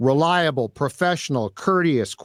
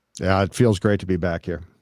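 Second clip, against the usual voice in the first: very low, insincere, unenthusiastic voice with no pep; 9 semitones lower than usual. Welcomed back to the studio during the show intro, the guest answers unenthusiastic and insincere. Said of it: "I'm going to need some more enthusiasm".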